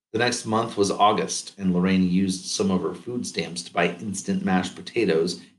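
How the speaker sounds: ordinary delivery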